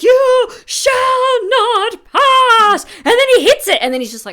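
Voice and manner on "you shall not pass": very high, very slow, "pass" drawn out. Describing the staff moment in the scene, imitating Gandalf. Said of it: "it's like".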